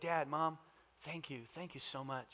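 mock tearful weeping, words pushed out through crying. Retelling a son thanking his parents, imitating someone weeping. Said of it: "he began to weep".

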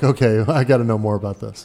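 ordinary talk

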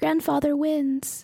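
quick aside said in passing. Voicing characters who look at the party and speak: said under their breath. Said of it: "they say under their breath".

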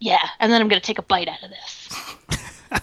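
put-on unbothered, ice-cool, badass delivery. Acting out a witch holding up a hexed apple: imitating a badass character. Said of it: "Very badass".

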